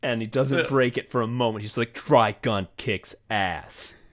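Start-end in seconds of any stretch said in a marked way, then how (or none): 1.9-3.9 mock angry, about-to-fight badass hero voice, never breaking. Quoting a guy who never breaks his act, in a mock-angry hero voice. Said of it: "like he's in his like angry, like about to fight hero mode".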